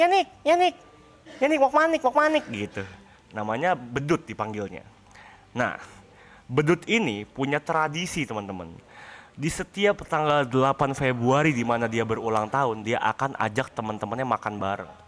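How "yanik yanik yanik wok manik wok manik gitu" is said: squeaky, piercing, shrill, very high voice. Describing Bedut and how Bedut talks: Bedut's shrill squeaky voice. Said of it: "suaranya cempreng".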